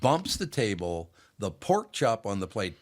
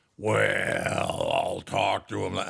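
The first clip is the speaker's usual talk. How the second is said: deep, low, creaky rumble, very slow and drawn out. Retelling how his mother talked: imitating his mother's deep voice. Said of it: "when she got deeper".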